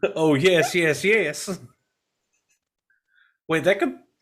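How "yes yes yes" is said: put-on loose, kind of southern accent on "yes". Answering yes while joking about Seanchan accents: kind of southern accent. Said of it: "I said yes, yes, yes, kind of southerny".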